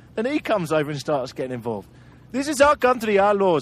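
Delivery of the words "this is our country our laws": failed put-on accent, drifting into Indian. Retelling a roadside stop, speaker voices a man who gets involved, bad put-on accent, sounds indian. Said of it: "I can't do the accent. I always end up in India".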